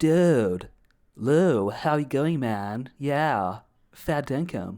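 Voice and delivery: very slow, drawled, put-on American accent. Mocking how an American would greet the speaker: imitating an American accent. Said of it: "you can't come up to me like some American".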